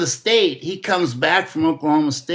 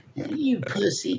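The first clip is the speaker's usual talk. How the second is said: very high-pitched, needling, taunting tone; 4 semitones higher, 7 dB quieter than usual. Retelling someone's taunt, imitating a very high-pitched voice. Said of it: "he'd be a real high pitched voice".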